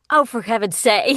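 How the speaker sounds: fed-up, irritated, exasperated outburst. Retelling reacting to an irritating character while recording: imitating own exasperated outburst. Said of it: "there'll be a character who's irritating".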